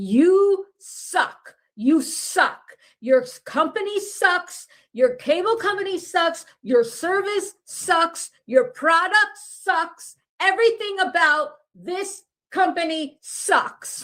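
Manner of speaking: mock high, furious screaming rant. Retelling a husband's rant into the phone at the cable company: imitating someone screaming angrily. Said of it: "He's screaming this into the phone".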